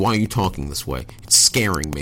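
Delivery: ordinary talk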